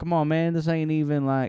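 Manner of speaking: put-on Southern accent. Retelling how an old classmate haggled over a power drill: imitating a Southern accent. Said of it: "he had, like, a Southern accent".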